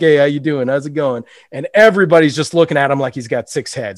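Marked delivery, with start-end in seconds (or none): 0.0-1.2 put-on polite, smiley voice. Retelling a movie scene, greeting a bar: imitating Eddie Murphy, put-on polite smiley. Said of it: "very polite, very smiley, very typical Eddie Murphy".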